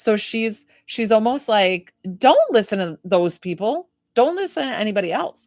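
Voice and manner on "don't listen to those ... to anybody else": brisk, snappy, curt, no-nonsense scolding tone. Relaying a grandmother's message during a reading: imitating a snappy grandma. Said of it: "telling this in a snappy kind of way".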